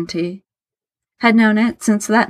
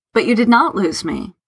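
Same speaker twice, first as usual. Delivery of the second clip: usual speaking voice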